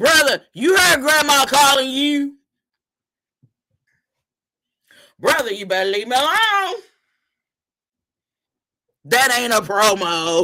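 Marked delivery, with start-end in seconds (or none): 0.0-6.8 put-on mimicked young child voice, pitched higher. Retelling how a little grandson keeps calling his brother: imitating a little grandson. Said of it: "I hear my little grandson call his brother".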